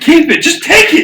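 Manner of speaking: high, loud, laughing, panicked shout. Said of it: "he was like".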